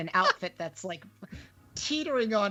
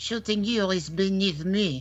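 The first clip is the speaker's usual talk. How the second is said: put-on French accent. Retelling a spy's film line delivered with a put-on French accent. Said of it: "one time I did it with a French accent".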